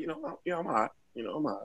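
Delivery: easygoing, casual, offhand, matter-of-fact tone. Imitating how people admit being high: imitating people admitting they're high. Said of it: "You know how people, like".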